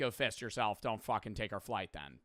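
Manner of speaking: crude, rude, dismissive brush-off tone. Acting out an airline answering a complaint: imitating Ryanair being rude. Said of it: "Versus them being like".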